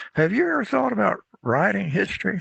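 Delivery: little, high, creaky cracked voice. Retelling Dr. DeBow calling him up after class; imitating her cracked voice. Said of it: "she had this little cracked voice".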